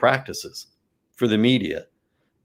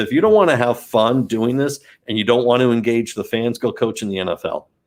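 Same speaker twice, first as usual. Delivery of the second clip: ordinary talk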